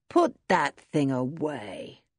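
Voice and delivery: in a drawl. Buffalo speaks to Pottersham, who is holding a gun, drawling. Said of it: "he said in his drawling voice".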